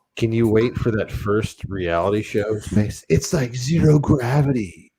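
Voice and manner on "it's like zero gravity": high, loud, hyped announcer-style read. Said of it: "Okay, now say it like this".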